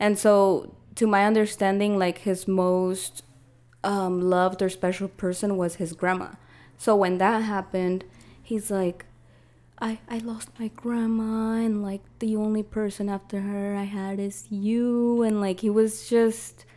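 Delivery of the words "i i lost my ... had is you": put-on tearful, choked-up crying voice. Retelling what an ex said about losing his grandma: imitating someone crying. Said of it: "I felt bad 'cause he was crying".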